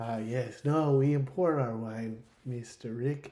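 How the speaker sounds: creepy 1940s Hollywood film man's voice. Describing how a droid talks, the speaker imitates a creepy 1940s movie guy voice. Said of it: "literally like the creepy guy from like old nineteen forties movies".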